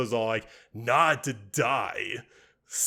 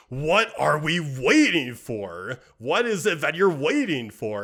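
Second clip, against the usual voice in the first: mock testy, fed-up, impatient, demanding tone; 4 semitones higher than usual. Retelling a scene, quoting a character who waits too long: imitating impatience. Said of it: "Grievous was getting very impatient".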